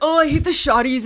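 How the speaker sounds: put-on, slangy Toronto accent. Mocking people in videos who talk that way: imitating a fake Toronto accent. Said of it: "Nobody speaks like that".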